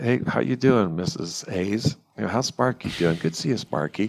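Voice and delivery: soft, subdued voice. Demonstrating how to greet a pet owner and her pet, soft, subdued greeting. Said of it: "speaking softer because it causes less fear".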